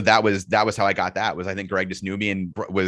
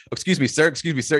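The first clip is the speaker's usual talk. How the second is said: playful, teasing, overly polite, pitched-up tone; 7 semitones higher than usual. Retelling how another speaker followed them on the street: imitating someone teasingly calling out. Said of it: "kinda messing with me".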